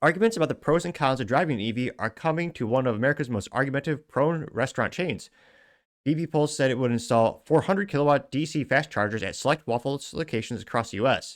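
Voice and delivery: normal talking voice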